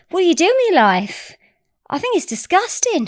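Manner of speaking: put-on half-landed Australian accent. Retelling what a woman said to him, attempted Australian accent. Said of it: "an Australian accent?".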